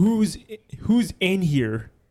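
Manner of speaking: acted-out yell. Retelling how a man entered a silent, empty room, retelling a scream. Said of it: "he just screams".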